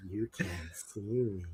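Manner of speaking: creepy, very hushed, slow character voice. Showing how a creepy character might say the catchphrase: creepy character voice. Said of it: "a creepier, creepy character that just went".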